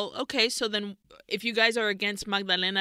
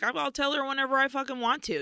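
put-on prickly, defensive, pitched-up snap; 5 semitones higher than usual. Retelling a sister's defensive answer about telling their mom: imitating a defensive reply. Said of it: "gets very defensive about that".

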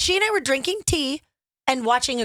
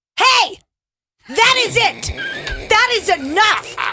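very high-pitched, raised, voice-straining yell; 10 semitones higher, 8 dB louder than usual. Asked to show it, retelling telling children to stop: imitating own yell at kids. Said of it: "And it hurts my voice to even talk".

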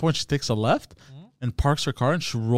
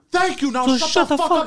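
imitated shouting, higher; 4 dB louder than usual. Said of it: "while you were yelling?".

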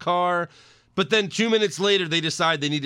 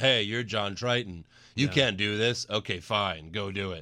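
lifeless, bland, underacted flat monotone; 7 semitones lower, 6 dB quieter than usual. Mocking the worst-cast actor's lines while recapping the movie, mock flat monotone. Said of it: "Like monotone, every word he said".

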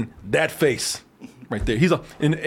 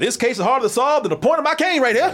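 put-on old Southern gentleman accent, pitched up; 8 semitones higher than usual. Imitating an actor who talks like a Southern guy: imitating a Southern guy. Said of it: "he talks like a Southern guy".

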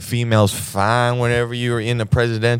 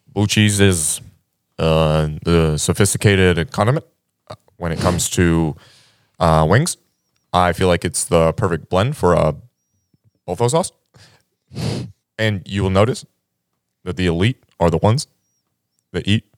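put-on hiccupy voice, lower in pitch; 5 semitones lower than usual. Doing a voice bit for listeners, speaker uses a put-on hiccupy voice. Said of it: "You sound like you have the hiccups".

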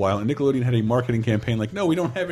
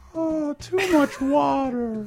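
very high, slow, drawn-out cartoon voice. Comparing cartoon characters and why one sucks: Mickey Mouse impression. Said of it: "And here's my impression of Mickey Mouse".

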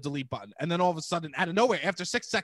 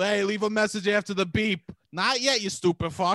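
put-on New York voice, higher; 3 semitones higher than usual. Joking about a voicemail greeting on a New York phone: put-on New York voicemail voice. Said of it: "I have the most New York phone out there".

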